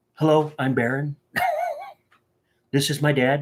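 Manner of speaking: slow, drawn-out delivery, pitch swooping. Imagining a son talking like his father: bad Donald Trump impersonation. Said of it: "that's a bad Trump impersonation".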